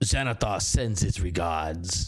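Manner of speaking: very low, deep, rumbling orc voice. Game master voices a hostage answering a player's question: deep orcish voice. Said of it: "He he says in this deep orcish voice".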